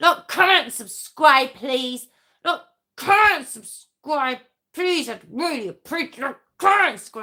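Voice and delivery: loud, aggressive, excited, pushy fired-up urging. Asking viewers to like, comment and subscribe: aggressive excited urging. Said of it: "I haven't been that aggressive in a while".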